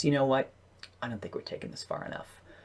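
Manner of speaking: hushed, very quiet, self-assured, patronizing, condescending tone. Showing how a character in the scene might respond: confident, a little condescending. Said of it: "getting really kinda confident".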